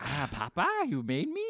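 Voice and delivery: simple-worded talking-toy voice. Retelling a film scene, voicing Pinocchio: imitating Pinocchio like a Furby. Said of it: "You're making him sound like a Furby".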